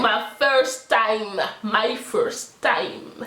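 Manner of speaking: slow, drawn-out mock English accent.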